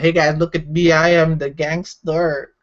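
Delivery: slow, bad, half-there put-on Filipino accent. Joking about wearing a new hat, almost Filipino accent. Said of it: "that was like my almost Filipino accent".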